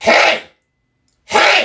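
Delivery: acted, very high, piercing, shrill yell. Retelling a third-grade teacher known for yelling in the lunchroom: imitating a teacher yelling. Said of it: "yelling like this".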